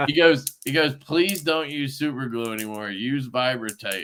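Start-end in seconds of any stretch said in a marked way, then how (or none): none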